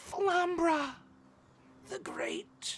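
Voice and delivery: fading whisper. Narrating a game, voicing a woman hit by darts as she falls, in a dying whisper. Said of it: "she whispers as she falls unconscious".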